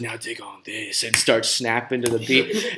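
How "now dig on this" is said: hushed, soft half-whisper under the breath. Recalling a funny diner scene where he plays piano: retelling a half-whisper. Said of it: "he whispers".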